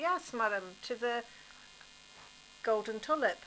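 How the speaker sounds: ordinary delivery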